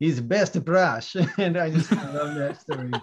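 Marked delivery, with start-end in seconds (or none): 0.0-1.1 put-on heavy, thick, strong Russian accent. Retell an artist answering an audience member who noticed he uses his fingers, in a strong Russian accent. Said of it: "in his, you know, strong Russian accent said".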